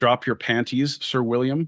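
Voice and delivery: ordinary talk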